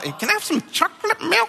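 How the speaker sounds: put-on sweet, very high, cute tiny kid voice. A dad retelling how his son Mason asks him for things, imitating Mason's cute little voice. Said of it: "he says it in such a cute little way".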